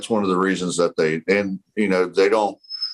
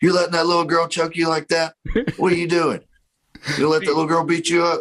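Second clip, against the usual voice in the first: mock very high, taunting, trash-talking tone; 10 semitones higher than usual. Retelling taunting boys in jujitsu class who get choked by a girl: retelling trash talk. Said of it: "I'll be talking smack to 'em".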